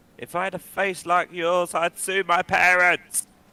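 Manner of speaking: shrill, booming, very loud, slow shout. Voicing a character heckling a fighter from the crowd: Nicholas shouting from the crowd. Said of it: "you can just hear Nicholas shout from the crowd".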